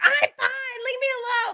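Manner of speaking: shrill, very high-pitched screaming. Retelling how a woman screamed at a store employee: imitating someone screaming. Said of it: "Jamie just starts screaming at her".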